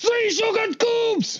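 put-on shrill, very high-pitched, furious German accent. Answering a tea question in a put-on angry german accent. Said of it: "you're only angry German".

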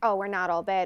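normal talking voice

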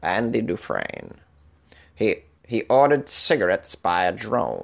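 bad put-on voice, slow, drawn out, swooping pitch. Joking about a drone delivering to a prisoner: Morgan Freeman impression. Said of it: "this is my Morgan Freeman impression".

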